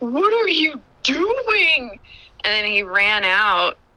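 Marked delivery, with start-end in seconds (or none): 0.0-2.0 mock high frightened scream, "doing" drawn out. Recounting finding someone hidden in your car, retelling a scream. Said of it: "And I just screamed".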